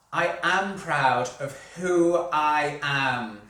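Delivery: slow, loud, smiling, purposeful voice with real conviction.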